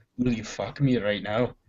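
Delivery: put-on odd, very soft, hushed Scottish-Irish accent. Imagining Liam Neeson asking someone something: Liam Neeson Scottish-Irish accent. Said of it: "fucking weird Scottishy, Irishy accent".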